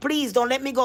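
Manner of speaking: ordinary delivery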